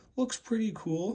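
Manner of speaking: voice cracking up high. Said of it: "sorry for the voice crack".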